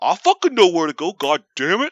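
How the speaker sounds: mock fuming, loud, furious outburst. Recounting giving driving directions from the car: imitating Claude getting mad. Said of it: "he just gets so fucking mad".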